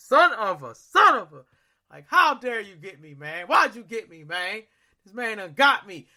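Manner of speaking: shocked, spooked, startled and scared exclamation. Retelling being jumped from behind in a scary attraction: retelling a startled, scared outburst. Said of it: "he just pops up behind my shoulder and I throw my phone".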